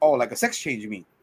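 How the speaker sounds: put-on sarcastic duck voice. Retelling a movie scene where Howard replies to "transformation is complete": imitating sarcastic Howard. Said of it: "that sarcasm is like".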